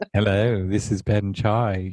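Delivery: soft smooth voice. Trying out the same podcast opening with own name: dulcet voice. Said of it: "that really dulcet voice".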